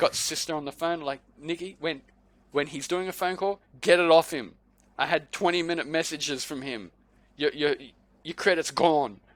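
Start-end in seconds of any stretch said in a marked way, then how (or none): none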